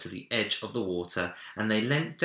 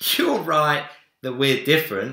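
very loud, high voice, laughing throughout; 6 semitones higher, 8 dB louder than usual. A boy answers a bear who tried to copy him, laughing. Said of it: "laughed Minik".

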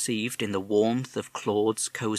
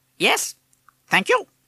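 very high, loud, shrill squawking bird voice; 13 semitones higher, 7 dB louder than usual. A bird politely answers a courteous inquiry, squawking. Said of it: "he squawked".

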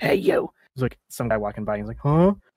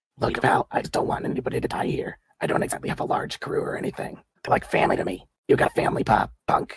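rough, raspy voice all the way through; 2 semitones lower than usual. As a game master voicing a gang leader, tell the players you want nobody dead, raspy. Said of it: "She rasps out".

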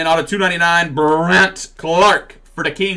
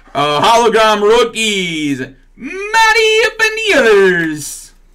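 fake Brazilian accent, drawn out and swooping; 6 semitones higher, 3 dB louder than usual. Opening trading card packs, reading out the cards in a bad Brazilian accent. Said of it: "Nice Brazilian accent there".

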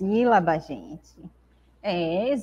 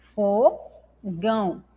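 fogão broken apart slowly, syllable by syllable, fo then gão. Teacher counting syllables with a student, slow syllable-by-syllable 'fogão'. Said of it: "Tem que falar devagar".

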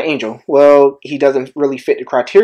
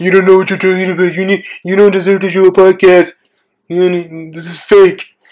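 put-on hater voice, higher; 5 semitones higher than usual. Podcaster voicing critics of the podcast, imitating a hater. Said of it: "That's my imitation of haters".

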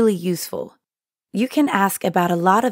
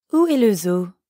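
ordinary talk

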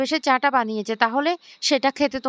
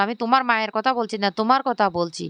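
ordinary delivery, nothing marked

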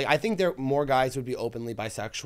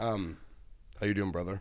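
fake, put-on masculine voice; 6 semitones lower, 7 dB quieter than usual. Showing how he talks at the grocery store, put-on masculine voice. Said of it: "When [name] does his straight voice, it sounds very masculine".

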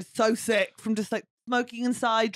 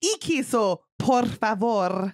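bad put-on Spanish accent and pronunciation; 3 dB louder than usual. Retelling their own food order with a bad Spanish accent. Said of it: "do bad Spanish".

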